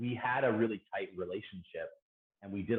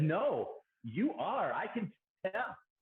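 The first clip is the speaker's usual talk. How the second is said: put-on very high, slow, drawn-out, thick Portuguese accent; 12 semitones higher than usual. Retelling a woman who came up to the speaker one day: heavy Portuguese accent. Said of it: "in this very heavy Portuguese accent".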